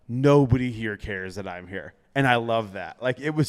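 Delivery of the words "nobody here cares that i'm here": mocking, amused tone, said through laughter. Retelling walking through crowds of fans: retelling own words, laughing. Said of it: "I'm laughing because I'm like".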